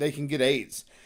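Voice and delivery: ordinary talk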